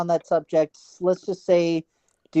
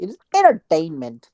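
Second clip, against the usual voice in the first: put-on Canadian accent. Showing how to make a Canadian accent, in a Canadian accent. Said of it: "that is how you make a Canadian accent".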